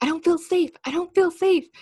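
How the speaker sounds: high, loud, acted scream, repeated twice. Retelling how a man reacted to a drone during a game, retelling a scream. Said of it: "And then he just starts screaming".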